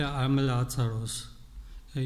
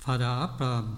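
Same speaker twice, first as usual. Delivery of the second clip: usual speaking voice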